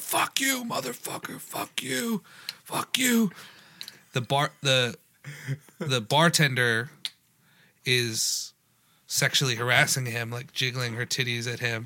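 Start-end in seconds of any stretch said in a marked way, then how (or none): 0.0-3.3 put-on, very high-pitched, shrieking screamed voice. Retelling how a guy at a bar screamed at the TV: imitating someone screaming. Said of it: "He's screaming at the T V".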